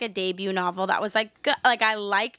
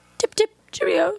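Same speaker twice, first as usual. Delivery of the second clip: very high, loud, put-on British accent; 10 semitones higher, 5 dB louder than usual. Joking about a very british audiobook narrator: mock british accent. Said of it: "I was in the British vibes. I was like".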